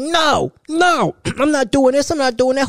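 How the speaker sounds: put-on high-pitched, yelling child voice. Describing how kids act up in public: imitating kids yelling.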